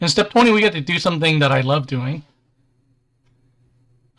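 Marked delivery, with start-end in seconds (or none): 0.1-2.2 fast, sarcastic tone. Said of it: "I'm being sarcastic".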